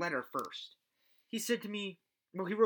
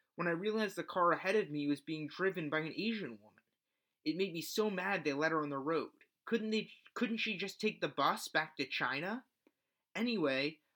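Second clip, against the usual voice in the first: normal talking voice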